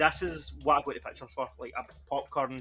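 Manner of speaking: plain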